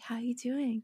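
sweet, high, gentle bedside-manner doctor voice. Retelling a doctor's late phone call, imitating her sweet doctor voice. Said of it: "your doctor voice".

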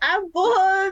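high, loud, mock-bored, offhand delivery.

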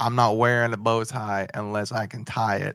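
ordinary delivery

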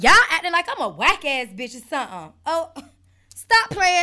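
heated, angry outburst with swooping pitch. Ranting at viewers about reposting, going off angrily. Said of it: "I went off".

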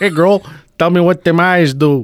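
put-on Minnesota Midwestern accent. Acting out a guy from Minnesota hitting on a girl: Minnesota accent. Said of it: "From Minnesota".

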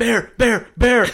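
shrill, high, loud screaming, words repeated. Recalling a step-grandpa running through the cabin door, retelling a scream. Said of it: "he's just screaming".

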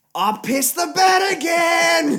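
very loud, very high-pitched, rising, drawn-out yell. Retelling how a friend woke up and called to his mum: imitating someone yelling. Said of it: "He yelled out to his mum".

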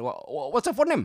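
screaming in a weird fake Indian accent. Retelling how he sounded questioning someone, screaming in weird fake Indian accent. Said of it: "this is how he sounded, like, the Indian accent".

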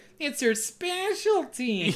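very high-pitched, mocking tone. Retelling how a character repeats her words: imitating a mocking voice. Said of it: "in a voice mocking her".

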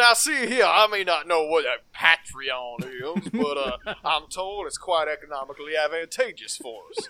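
loud, folksy, simple country voice. Podcast host thanking the show's patrons, in a simple country lawyer voice. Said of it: "I'm gonna do this in a simple country lawyer voice".

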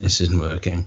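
ordinary delivery

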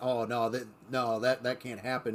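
plain

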